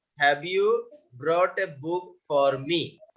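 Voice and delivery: ordinary delivery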